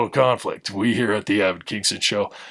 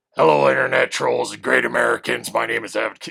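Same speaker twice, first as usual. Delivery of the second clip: put-on, throat-straining voice. Greeting viewers at the start of a video: Alex Jones voice. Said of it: "I don't know how Alex Jones talks like this".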